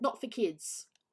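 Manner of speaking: steady, firm, stern voice. Retelling what she said to a parent's running kid, in a firm voice. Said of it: "In a firm voice".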